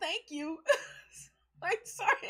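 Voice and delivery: giggling through words. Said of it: "I'm just giggling like a crazy person".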